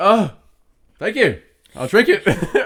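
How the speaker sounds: mock flustered panic, very high, very slow, drawn out. Retelling a reply to a man who offered water: imitating own panicked voice. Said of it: "In a panical voice, in the panic voice".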